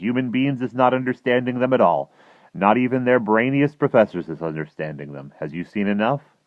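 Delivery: plain reading voice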